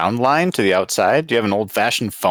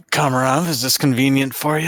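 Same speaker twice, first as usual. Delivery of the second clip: quick, rushed aside spoken to oneself; 4 semitones higher than usual. Speaking in character, asking kamaroff a question, muttered under the breath. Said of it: "I say under my breath".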